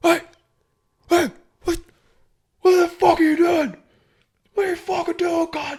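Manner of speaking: mock very high, shrill, screeching yell. Speaker recounts what they heard while filling up, imitating a man screaming. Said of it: "He's, he's screaming".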